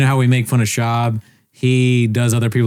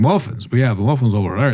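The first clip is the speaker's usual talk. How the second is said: put-on super heavy, strong Scottish accent. Retelling what a bakery worker in Scotland said, in a big Scottish accent. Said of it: "he had this big Scottish".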